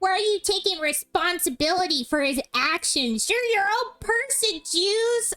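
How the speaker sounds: sped-up sounding, high-pitched cartoon voice. Voicing a character in an acted scene, speaking to juice; high-pitched voice. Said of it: "we're both like high pitched voices".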